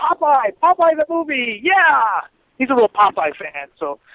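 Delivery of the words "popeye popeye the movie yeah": high, drawn-out, sarcastic cheering yell. Camped out in costume, a buddy yells back at a passing fan: retelling a sarcastic yell. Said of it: "just to be real sarcastic, starts yelling back".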